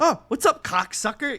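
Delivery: put-on loud, high, furious raging yell. Retelling a phone call to the owner after being fired: imitating his own yelling.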